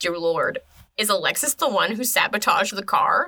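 ordinary delivery

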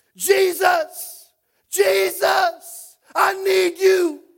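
very high-pitched, very loud shout. Retelling the story of Bartimaeus calling out to Jesus, acting out his shout. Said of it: "he shouts".

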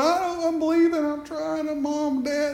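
put-on crying, high and tearful, pleading through tears. Retelling a girl's words while she prayed: imitating someone crying. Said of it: "She's crying and going".

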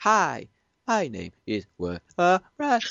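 very slow, choppy, up-and-down spliced recording voice. Imitating a recorded voice that doesn't sound like a proper sentence: choppy up-and-down spliced voice. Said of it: "it's up and down".

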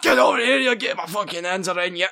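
put-on yelling in a Scottish accent. Imitating a Scottish unit charging at you, yelling in a Hagrid-Shrek hybrid accent. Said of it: "he's just yelling at you as he runs at you with, like, a Hagrid Shrek hybrid".

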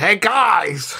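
very high drawn-out yell, guys stretched long. Unsure where they came from, a character calls back behind them, yelling. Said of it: "I'm going to yell back behind me".

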